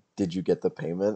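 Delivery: barely audible, very quiet, hushed voice. Repeating a character's question after others missed it: very quiet voice. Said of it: "I said very quietly".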